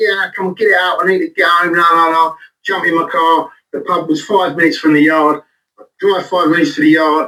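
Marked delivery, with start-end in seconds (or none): 0.0-2.4 irritable, pushy, screaming bark. Recalling his drinking days, the speaker acts out yelling at his labourers: retelling screaming at labourers. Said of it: "I'd be screaming at me".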